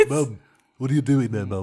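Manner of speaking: put-on cartoon baby voice. Trading impressions with others, a speaker attempts a Stewie impression. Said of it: "He's like, mum".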